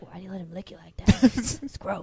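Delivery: put-on, made-up talking-dog voice. Imitating what the dog would say about the licking: imitating a dog talking. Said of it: "the dog's just like".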